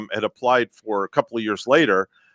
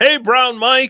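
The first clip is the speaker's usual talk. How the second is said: mock very high, loud kids' yell, full lungs; 5 dB louder than usual. Retelling neighborhood kids greeting a visitor: imitating kids yelling. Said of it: "they yell at the top of their lungs".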